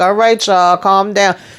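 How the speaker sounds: plain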